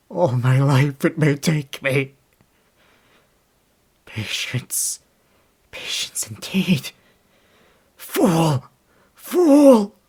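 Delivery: aggressive, explosive outburst at full volume. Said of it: "so aggressive and explosive".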